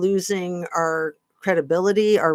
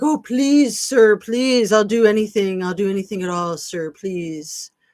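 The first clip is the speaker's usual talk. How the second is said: desperate, groveling, pleading, begging voice. Retelling how someone imitated groveling world leaders: imitating someone begging. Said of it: "he went into character".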